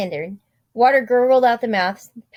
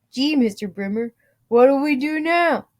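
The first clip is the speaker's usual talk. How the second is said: glum, nasal cartoon sidekick voice; 4 semitones higher than usual. A man nicknamed Boo Boo speaks to his boss when a pipe breaks, sad, nasally Boo Boo voice. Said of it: "in this sad, nasally voice".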